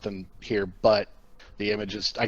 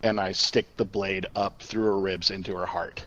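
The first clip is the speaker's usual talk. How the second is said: ordinary talk, nothing marked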